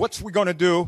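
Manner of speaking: loud, mock screamed delivery. Retelling the vice president out by the stuck buses: imitating someone screaming. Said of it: "he's screaming".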